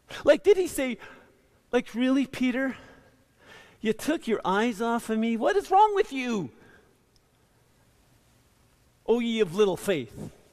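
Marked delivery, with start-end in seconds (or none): 1.9-10.1 fed-up, exasperated scolding tone. Acting out one possible way Jesus spoke to Peter: imitating an exasperated rebuke. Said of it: "the tone of voice that he used".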